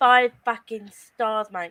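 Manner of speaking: aggressive, forceful delivery. Giving a book rating to friends: aggressive. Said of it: "Aggressive stars".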